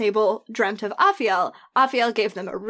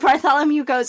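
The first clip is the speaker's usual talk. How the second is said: plain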